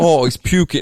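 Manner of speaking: put-on New Jersey accent. Retelling what Kurt said while he threw up beside the car: Kurt's New Jersey accent. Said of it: "He has a New Jersey accent".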